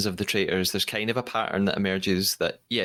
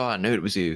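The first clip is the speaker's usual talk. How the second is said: awful, clumsy put-on Australian accent. Recapping the traitors unmasking, the speaker voices Angus telling Marielle, in an awful Australian accent. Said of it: "that was awful Australian accent".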